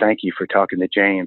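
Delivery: mock whispering. Retelling what the wife whispered in his ear: imitating a whisper. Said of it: "His wife whispers in my ear".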